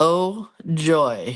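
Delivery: sarcastic, mock-enthusiastic fake excitement. Introducing a copycat art video of The Starry Night, sarcastic fake excitement. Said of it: "You can hear the excitement in my voice".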